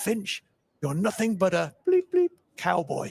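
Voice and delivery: mock posh upper-crust voice, swooping and rising. Retelling a bowler calling down the ground to the captain: imitating a very loud posh voice. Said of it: "in a very loud, posh voice".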